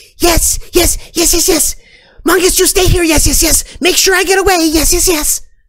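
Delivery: tiny creature voice, very high and very loud. Game master voicing a smaller voice answering the others as they get away: small voice. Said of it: "this other smaller voice saying".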